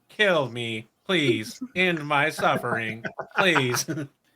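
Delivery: slow, begging, suffering dying-machine voice. Imagining the new blender speaking as soon as it's switched on, mock-pleading blender voice. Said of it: "all I hear is like a voice like".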